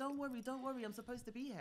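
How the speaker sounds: put-on Nigerian accent. Retelling what a man found in the speaker's house said, put-on Nigerian accent. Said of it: "You just put on that Nigerian accent".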